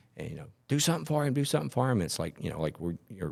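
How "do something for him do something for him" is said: mock shrill, very high screaming. Recounting a bystander at an accident scene who demands help, retelling a man yelling. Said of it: "he's like yelling and screaming".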